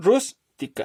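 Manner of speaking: rús punched high, whole word rústica slow. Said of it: "la sílaba tónica es la primera".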